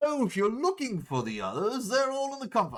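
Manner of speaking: very high character voice, swooping around. Unsure how the voice went, the speaker has a character greet newcomers in Gant voice. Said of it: "What was my Gant voice?".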